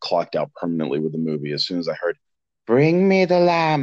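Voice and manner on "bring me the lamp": very high, slow, drawn-out falsetto villain voice. Recalling a villain's line from a Super Bowl movie trailer, in a falsetto Jafar voice. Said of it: "taking falsetto Jafar seriously".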